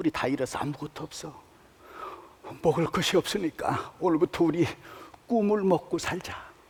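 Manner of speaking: soft, tearful near-whisper with voice choking. Retelling what he said to his wife after a long fight, retelling tearful speech. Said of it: "제가 울먹이면서 이렇게 얘기했습니다".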